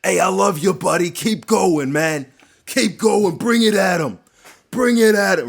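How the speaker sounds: put-on loud, high cheering in a New York accent. Retelling a fight corner's pep talk: imitating Ray Longo's New York accent. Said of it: "Ray Longo in his New York accent".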